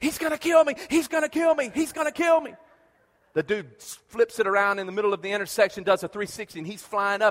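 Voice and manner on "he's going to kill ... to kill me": mock very high, frantic, terrified, panicked scream. Speaker recalls his brother running past him, retelling a panicked scream. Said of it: "He comes flying by me screaming".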